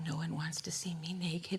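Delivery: very quiet, soft, hushed, barely-there voice. Retelling what a small man said during a talk, very quietly. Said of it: "he says very quietly".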